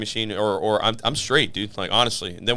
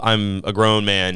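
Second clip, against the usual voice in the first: ordinary delivery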